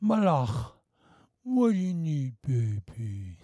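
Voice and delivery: doting, fond talk, slow and sing-song. Acting out a father asking his daughter what she needs: doting daddy talk to daughter. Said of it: "I still talk like that".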